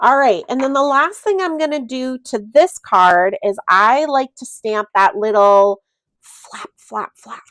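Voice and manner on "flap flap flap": whispered, quieter. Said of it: "You have to whisper it".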